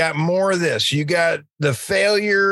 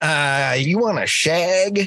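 slow delivery with every word drawn out. Picturing Mike Myers running around asking a question: Mike Myers as Austin Powers. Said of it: "I could just see Mike Myers running around going".

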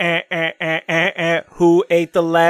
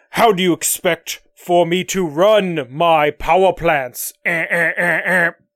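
slow, clunky, lumbering mechanical robot voice. Voicing a future robot complaining about power plants: clunky robot voice. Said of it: "you sure do sound a lot clunky".

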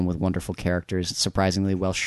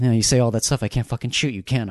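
put-on tearful, crying voice, pitched higher; 3 semitones higher than usual. Quoting a film character's line from a favorite scene: imitating someone crying. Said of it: "And he's, like, crying".

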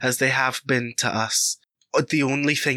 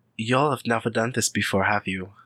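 grim, sardonic, sarcastic mutter under the breath; 3 semitones lower than usual. Voicing an old woman, an Elder, who mutters to herself: grim sarcastic mutter. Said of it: "she just kind of mutters to herself".

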